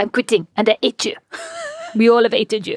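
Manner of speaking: phony put-on French accent with swooping pitch. Retelling what a departing employee said: put-on french accent. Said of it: "amazing French accents".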